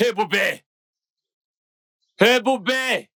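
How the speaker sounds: loud shouting. Calling another person over to the kitchen: shouting a name. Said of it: "Pourquoi tu cries mon nom de la sorte ?".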